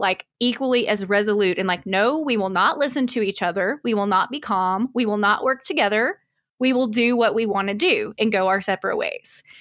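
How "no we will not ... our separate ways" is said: normal talking voice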